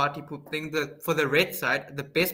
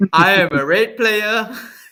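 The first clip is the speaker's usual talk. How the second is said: very loud, slow, high, deliberate delivery; 5 semitones higher, 11 dB louder than usual. Answering a request for an impression of Mister Grizzly, a player. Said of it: "That's all he says".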